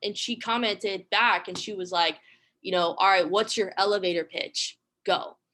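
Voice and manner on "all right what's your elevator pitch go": acted, mock sarcastic tone. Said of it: "sarcastic reply".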